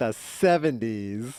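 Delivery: put-on mocking sarcastic tone on the word "seventies". Retelling how a teenager said a word in air quotes, mock-sarcastic. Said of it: "saying uh, seventies in quotes, real sarcastically".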